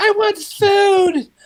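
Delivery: put-on play-acted, very high little-girl wail, "food" drawn out. Retelling a child heard over a baby monitor: imitating a little girl screaming. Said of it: "this little girl screaming, like".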